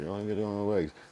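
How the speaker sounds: muttering. Retelling ordering chicken at the store: imitating muttering under breath. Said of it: "say it under my breath".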